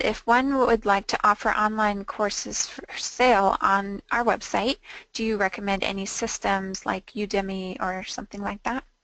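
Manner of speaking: plain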